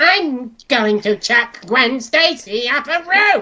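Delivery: very high, puppet-style goblin voice. Discussing an episode's characters, a speaker does a Muppet-like Green Goblin voice. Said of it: "Yours sounds like the Muppet version of the Green Goblin".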